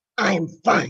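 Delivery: low, angry delivery throughout. Speaker says a phrase for listeners to guess the emotion portrayed: angry.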